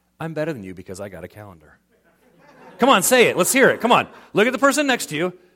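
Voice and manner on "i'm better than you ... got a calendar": dead serious, very low and quiet. Speaker shows the audience how to say it to the person next to them, dead serious. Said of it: "Say with the most serious face".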